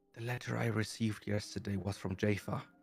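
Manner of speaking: half-whispered confidential tone. Voicing a character who half-whispers a secret into another's ear: Carla half-whispering. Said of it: "you hear Carla whispering into".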